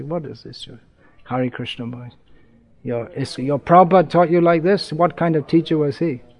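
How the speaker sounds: ordinary talk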